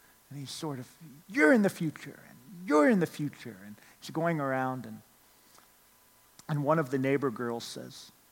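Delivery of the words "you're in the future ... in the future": playful put-on villain voice. Retelling a make-believe game among neighborhood kids: Noah's bad guy voice. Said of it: "he's in his bad guy mode".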